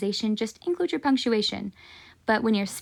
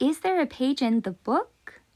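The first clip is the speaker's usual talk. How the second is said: rising intonation climbing up on book; 3 semitones higher than usual. Showing rising intonation in an English question, pitch rising toward book. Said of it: "We go up".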